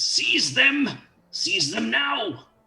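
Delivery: very high, drawn-out, demanding woman's voice. Voicing an unseen woman ordering guards to seize the party: very demanding female voice. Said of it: "very demanding voice".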